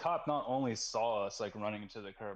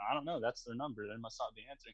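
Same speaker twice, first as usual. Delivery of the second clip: play-acted, very heavy sarcasm, laid on thick; 3 dB quieter than usual. Retelling a reply given to a cop: imitating a super sarcastic reply. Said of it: "some super sarcastic".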